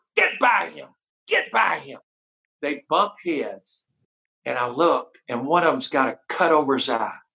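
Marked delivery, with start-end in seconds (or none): 0.2-2.0 mock coach voice, rough, screaming and urging. Retelling how he screamed at Matt Miller during a knockout drill, re-enacting the scream. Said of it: "I'm screaming at Matt Miller".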